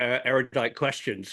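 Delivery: ordinary talk, nothing marked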